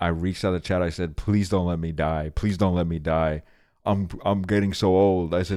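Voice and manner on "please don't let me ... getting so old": put-on tearful sobbing voice. Retelling an earlier moment of pleading with the chat: retelling own crying plea. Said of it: "I started crying".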